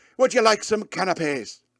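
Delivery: put-on Irish accent. Retelling an infiltration scene at an Irish mafia ballroom, in an Irish accent. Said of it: "I started doing the Irish accent".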